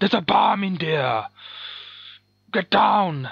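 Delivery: calling out loud and high. Running through his whole repertoire of lines: Arnold impression. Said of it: "That's his whole repertoire of lines".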